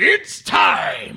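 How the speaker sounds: loud, full-voiced delivery. Showing how to announce the segment like Bruce Buffer. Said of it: "you didn't say it like Bruce Buffer".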